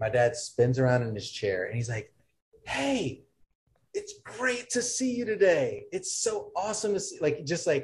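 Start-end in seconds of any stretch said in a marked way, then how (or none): 2.6-7.2 play-acted, very high, drawn-out, gushing, overjoyed sing-song. Retelling how dad greeted an angry client: imitating an enthused greeting. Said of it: "so enthused".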